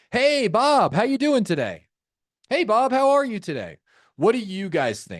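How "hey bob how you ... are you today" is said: high, swooping, overly enthusiastic salesperson voice. Demonstrating how an unexpected caller opens a call, overly enthusiastic salesperson. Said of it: "you don't want to sound overly enthusiastic".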